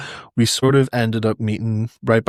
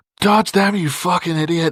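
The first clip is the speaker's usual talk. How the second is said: loud, high yelling, acted out; 7 semitones higher than usual. Retelling a fight, quoting the coach from the corner: imitating the coach shouting. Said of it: "hearing my coach shouting from the corner".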